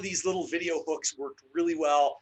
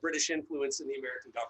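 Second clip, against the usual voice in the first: ordinary talk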